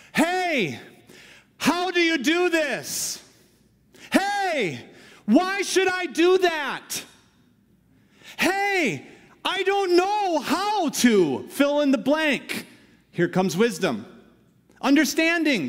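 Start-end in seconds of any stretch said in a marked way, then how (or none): 0.1-12.6 very high, very slow crying out. Speaker demonstrates how wisdom and understanding call out, calling out. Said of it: "Wisdom and understanding call out like this".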